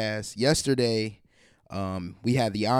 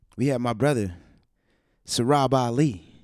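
airy, breathy put-on delivery, exhaling a lot of air. A podcast host introduces a special guest, the host's brother, in an airy, breathy voice. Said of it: "you lost like a lot of air".

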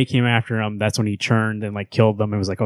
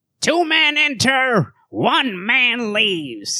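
very high, sing-song, swooping small-man voice; 14 semitones higher than usual. Speaker describing a movie duo shows how the little guy talks; impression of the little guy. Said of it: "he talks like this".

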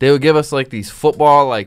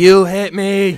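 mock dramatic childlike whining, higher pitch; 6 semitones higher, 3 dB louder than usual. Retelling how a kid fell and acted hurt: imitating a kid acting dramatic. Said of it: "started acting all dramatic".

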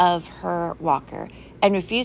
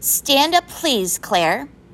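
stern, strict voice, pitched up; 7 semitones higher, 5 dB louder than usual. Mrs. Lovelace, noticing Claire and Molly laughing, addresses Claire, stern. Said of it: "she said sternly".

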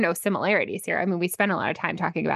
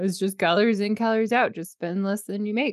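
mock, deliberately irritating, annoying voice; 3 semitones higher than usual. Mocking phrases people keep saying, in an annoying voice. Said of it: "That's my like annoying voice".

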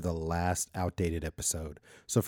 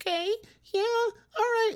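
put-on mousy squeak, much higher. Retelling a phone call with a cousin, imitating Mandy's mousy voice. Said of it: "She sounded like a mouse".

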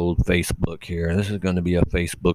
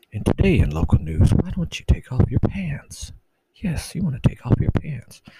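breathy, lulling, hypnotizing radio whisper; 8 semitones higher than usual. Mocking how radio hosts talk, in a hypnotic NPR announcer voice. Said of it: "talk like they're trying to hypnotize you".

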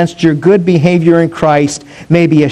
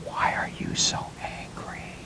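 soft, gentle, respectful hushed whisper. Retelling a man's reply to another man's anger, in a soft whisper. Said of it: "in a soft and whispering voice".

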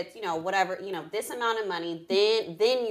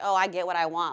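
plain

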